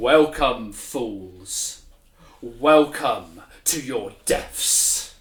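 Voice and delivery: low, deep-voiced presence. The game master voices what the players hear as they near it, in a deep voice. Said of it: "you hear a deep sound".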